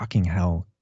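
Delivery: muttering under breath. Showing what they say many times a day: muttering under breath. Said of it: "Just like under my breath".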